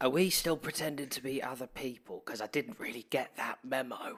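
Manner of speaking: hushed half-whisper throughout. Speaking in character to another player at the table: half-whispering. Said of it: "I'd like to whisper".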